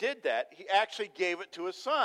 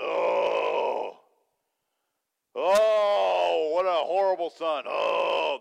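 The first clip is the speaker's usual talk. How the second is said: loud, very slow, drawn-out disapproving groan; 3 semitones lower, 5 dB louder than usual. Retelling how the Pharisees reacted to the son: imitating groaning Pharisees. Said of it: "they're groaning".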